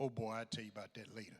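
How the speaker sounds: put-on deep baritone. Retelling his uncle's answer about who someone was, imitating Uncle D's deep baritone. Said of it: "he had a deep baritone voice".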